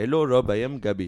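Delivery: mock Indian accent, put-on voice. Showing an example of doing an Indian voice: put-on Indian accent. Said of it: "do an Indian voice".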